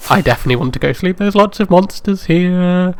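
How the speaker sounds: panicked voice with rising tone. A streamer playing a game talks to viewers, in a panicked tone. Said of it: "[Panicked Tone]".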